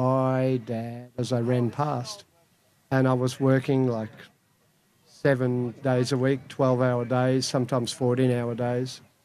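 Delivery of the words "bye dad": mock downcast, mournful, very sad little voice. Father recalls his young son saying goodbye as he rushed out, imitating a very sad voice. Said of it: "said in a very sad voice".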